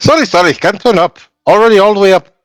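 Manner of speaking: very high, put-on Indian accent. A character answers a request to turn the music down; indian accent. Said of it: "permission to do an Indian accent".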